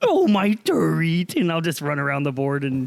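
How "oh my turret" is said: high-pitched, dopey, simple-minded, dim-sounding voice. Retelling playing Overwatch: Goldbjorn voice, like Pennywise. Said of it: "he just tells me I sound like a".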